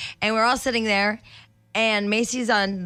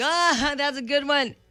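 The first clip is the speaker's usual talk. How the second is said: feigned interest and surprise, pitched up, drawn out; 6 semitones higher than usual. Retelling pretending not to know a friend's story: imitating feigned surprise. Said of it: "faking like I don't know the story".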